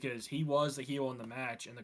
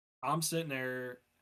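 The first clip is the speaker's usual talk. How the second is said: usual speaking voice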